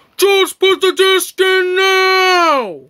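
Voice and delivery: loud, high yell, dragged out. Telling another character to start the disc: yelling. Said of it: "you don't have to yell at me".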